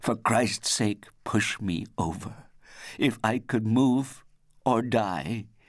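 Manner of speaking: high cry, voice sharpened with fear. Lying unable to move on the ledge, he calls to the narrator, sharpened with fear. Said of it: "his voice now was sharpened with fear".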